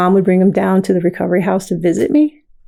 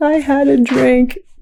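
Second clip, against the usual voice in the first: acted sobbing voice, higher pitch; 6 semitones higher than usual. Retelling a late-night phone call from a daughter, imitating someone crying. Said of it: "she's, like, crying".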